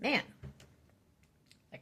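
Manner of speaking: plain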